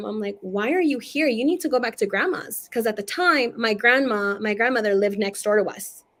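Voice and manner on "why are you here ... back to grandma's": put-on child voice, scolding tone. Retelling scolding a dead uncle who appeared on the bed: imitating own childhood scolding. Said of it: "I'm scolding him".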